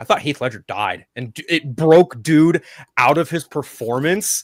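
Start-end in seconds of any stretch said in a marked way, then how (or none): 0.0-1.1 put-on acted-out skeptical, jaded, cynical teenage tone. Retelling a remark made to a costumed Joker at a park: imitating own cynical remark. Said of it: "cynical seventeen-year-old me, was like".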